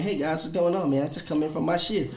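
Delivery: put-on polite, nice New England voice. Retelling own greeting to coworkers after a shift: imitating nice new england talk. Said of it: "trying to be this nice North England, you know, New England ass talking".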